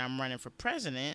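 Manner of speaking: plain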